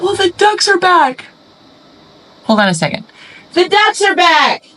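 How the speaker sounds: sudden, very high, swooping, excited yell. Interrupting a story about their mom when ducks appear, yelling excitedly. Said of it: "Sorry, I didn't mean to yell".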